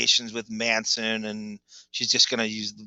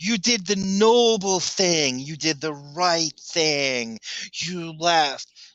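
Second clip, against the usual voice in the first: slow, high, dragged-out sarcastic mocking. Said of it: "she's just being sarcastic".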